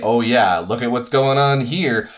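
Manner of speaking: usual speaking voice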